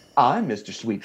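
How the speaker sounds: put-on southern drawl. Retelling a visit, the speaker quotes the man he was looking for, in Mr. Sweetbottom's grating Southern drawl. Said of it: "that Southern brawl accent".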